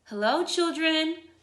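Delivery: high, sweet, honeyed, sugary voice. After footsteps in the hall, someone greets the children: sweet voice. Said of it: "someone said in a sweet voice".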